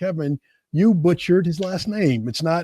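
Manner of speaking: ordinary talk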